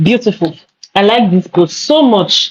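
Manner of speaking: dripping with irony, sarcastic. Reviewing a post aloud for viewers, sarcastic. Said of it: "I'm being very sarcastic".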